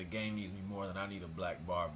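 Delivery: ordinary talk, nothing marked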